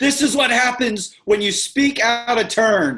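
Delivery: acted, shrill, loud, all-out screaming. Picturing another speaker walking down a hall: imitating someone screaming. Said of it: "you're just screaming".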